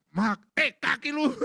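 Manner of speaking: high, loud, blunt retort.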